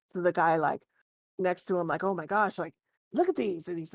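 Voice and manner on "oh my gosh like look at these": animated, excited, gushing dwarf voice. A narrator voices a dwarf talking to the guy next to him: dwarf talking excitedly. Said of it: "in Dwarvish excitedly saying".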